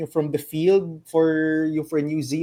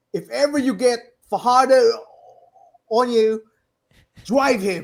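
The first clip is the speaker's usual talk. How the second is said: put-on New Zealand accent with raised pitch; 6 semitones higher, 4 dB louder than usual. Repeating the New Zealand coach's exact words, Coach Flavel voice, New Zealand accent. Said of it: "binigyan mo pa ng n- parang accent".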